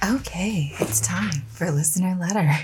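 husky, seductive voice. Podcast host introducing the listener letters segment, sultry voice. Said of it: "that's kind of like a sultry".

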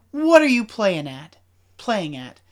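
halting, catching voice with a nervous laugh. Retelling a character's reply to Harry: imitating a voice catching in the throat. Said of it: "his voice catches in his throat for a second".

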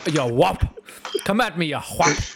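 fake Irish policeman voice. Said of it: "pronounced it like it had an H".

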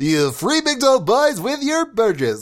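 big, sing-song, swooping announcer voice. Showing off other voices, first the announcer: announcer voice. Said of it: "I've got the announcer".

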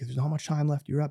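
urgent, encouraging corner-coach style voice. Retelling how Mike yelled at a bleeding kid: imitating Mike yelling. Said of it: "And he's yelling".

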